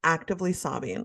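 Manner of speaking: usual speaking voice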